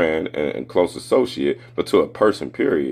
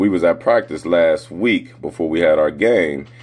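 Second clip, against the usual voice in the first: usual speaking voice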